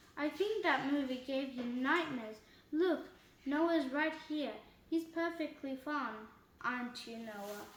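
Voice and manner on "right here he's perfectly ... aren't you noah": ordinary delivery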